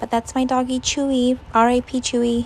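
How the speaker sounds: ordinary talk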